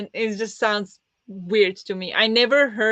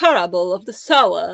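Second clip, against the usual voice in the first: raised British English accent; 2 semitones lower, 5 dB louder than usual. Comparing American and British English, the speaker demonstrates a British accent. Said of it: "But the British one".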